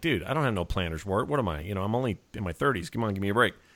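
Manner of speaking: soft, affronted, defensive pushback. Retelling their own past reply to him, mock-defensive retelling. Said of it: "I immediately got all defensive".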